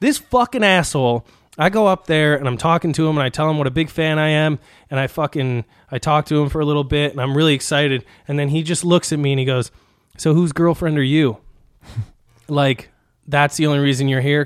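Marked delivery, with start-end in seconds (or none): none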